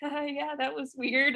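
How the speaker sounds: acted-out, awkward, high, nervous laughing through words. Retelling audience members leaving the film: imitating nervous laughter while talking. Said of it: "nervous laughter".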